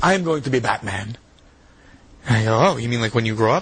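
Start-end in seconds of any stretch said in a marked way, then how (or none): 0.0-1.2 put-on slow, heavy Mexican accent laid on thick. Retelling what a man said to the speaker: thick Mexican accent. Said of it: "he's got a very thick Mexican accent".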